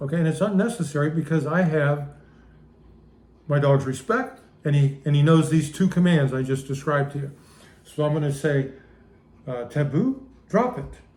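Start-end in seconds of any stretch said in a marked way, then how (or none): 9.6-10.8 steady, calm, even, unraised voice. A dog owner demonstrates giving the dog a drop-it command: calm, not yelling. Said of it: "That tone of voice".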